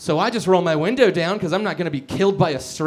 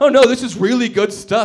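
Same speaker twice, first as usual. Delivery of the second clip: mock, snide, high, loud, dripping sarcasm; 6 semitones higher, 6 dB louder than usual. Retelling how police made fun of the weed: imitating police mocking sarcastically. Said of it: "made fun of the weed I had in a sarcastic way".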